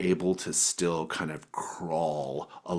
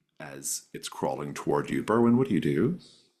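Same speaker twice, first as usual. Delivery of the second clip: normal talking voice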